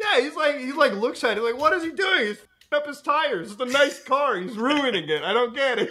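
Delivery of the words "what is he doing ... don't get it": mock, put-on yelling. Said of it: "He was actually yelling at the T V".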